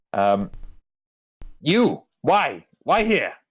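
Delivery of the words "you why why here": squeaky, very high, swooping kobold voice. Voicing a kobold sitting on a wall who stops the players: voicing a kobold. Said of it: "he sort of stops you and, and asks".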